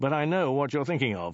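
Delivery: ordinary delivery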